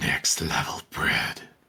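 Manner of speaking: demonic creature voice. Mid-roleplay, a player delivers this in a demonic creature voice. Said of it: "what the fuck was that voice? What kind of demonic creature did you summon?".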